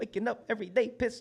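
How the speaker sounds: very high-pitched, loud delivery. Quoting a performer's line from the show: imitating BK Rucci. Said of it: "did I sound like him a little bit?".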